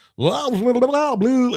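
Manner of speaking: high, mock radio-announcer blather. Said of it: "that whole pukey disc jockey".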